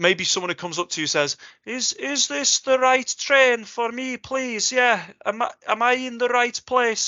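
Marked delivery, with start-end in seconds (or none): 1.7-7.1 put-on slow, high-pitched North Welsh English accent. Imitating a Northwesterner asking about the right train: imitating a North Wales accent. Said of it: "I'm gonna apologize to Lowry being a Northwesterner for this".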